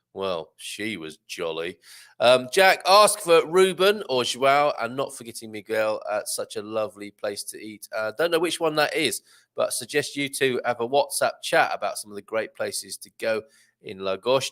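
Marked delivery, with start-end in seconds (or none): 0.1-1.7 very low, dry, flat, slow deadpan. Reading out a viewer's comment aloud: deadpan, dry delivery. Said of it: "You can imagine this in a deadpan, dry delivery".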